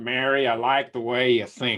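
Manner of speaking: put-on thick, broad Texan accent, laid on. Quote what he said to Mary after a pause, in a broad Texan accent. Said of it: "he said in his broad Texan accent".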